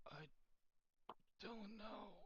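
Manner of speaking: very high, very soft, hushed, hurting voice. A messenger answers the party in their minds, in a pained voice. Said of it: "it's a pained kind of voice".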